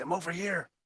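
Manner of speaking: hushed half-whisper with no voice. Answering a voice in the fog: half-whispering. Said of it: "I whisper".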